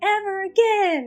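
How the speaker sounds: yelling voice. Retelling a quarrel, imitating someone shouting. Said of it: "she's shouting".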